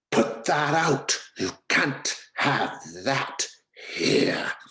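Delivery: very high, slow, shrill, loud hiss. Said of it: "someone hisses".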